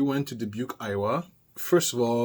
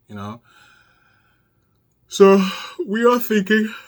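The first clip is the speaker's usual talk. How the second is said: very loud, pitched-up words spoken through a yawn; 9 semitones higher, 10 dB louder than usual. Speaker recounting a trip, yawning mid-sentence: yawning while talking. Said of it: "I don't know why I'm yawning".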